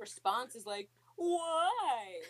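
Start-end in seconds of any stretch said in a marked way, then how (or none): 1.2-2.2 "why" drawn out, very high and loud. Retelling a movie scene where a character answers: perfect Anakin impression. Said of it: "That was the perfect Anakin impression".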